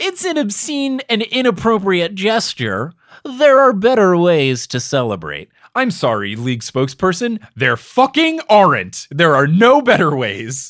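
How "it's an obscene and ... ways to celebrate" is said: high, whiny, sniveling nerd voice. Quoting an anonymous league spokesperson's complaint, in a sniveling nerd voice. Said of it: "from your sniveling voice to your nerd voice".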